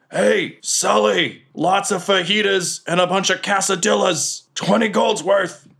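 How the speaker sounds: very high, slow, drawn-out called-out yell. Voicing a golem calling an order back to the kitchen: yelling in character. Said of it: "And he yells".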